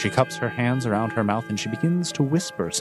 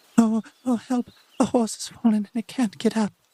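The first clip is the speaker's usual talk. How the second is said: faint whisper, pitched much higher; 10 semitones higher than usual. A game master voices Cecilia's plea for help carried on the wind, as Cecilia's whisper. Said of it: "quiet, like a whisper".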